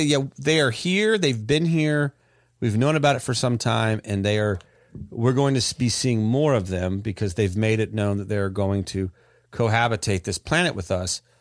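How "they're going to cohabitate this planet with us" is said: ordinary talk, nothing marked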